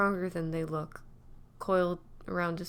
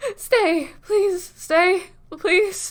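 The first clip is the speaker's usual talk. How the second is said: put-on slurred drunk pleading, very high and very loud; 12 semitones higher, 15 dB louder than usual. A narrator reads a drunk young man begging someone to stay, drunk, slurring, begging. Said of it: "Mind souped up in 1,000 different ways because he's drunk. / It's all these morons that look at him and think that they see something more than a young addict with one foot on the accelerator and the".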